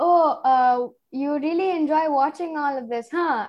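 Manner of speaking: put-on, amused words broken up by laughter. Retelling how dad questioned her about a series, imitating laughing while talking. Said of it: "And he just continues laughing".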